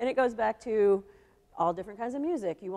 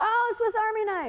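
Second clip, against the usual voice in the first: shouting, higher; 13 semitones higher than usual. Guessing a phrase while wearing headphones, yelling. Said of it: "sorry, I'm still yelling".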